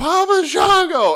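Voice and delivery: put-on shrill, very high, loud childish scream. Retelling a childhood demand to a face painter: imitating own childhood screaming. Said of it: "And I started screaming".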